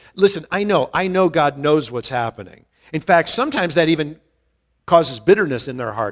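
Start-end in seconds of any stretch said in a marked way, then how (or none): none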